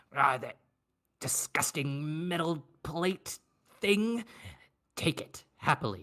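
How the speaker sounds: hissing, growling, snarling creature voice. A game narrator voices a magical bag answering a player, growling and hissing. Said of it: "the bag responds in kind uh, with growls".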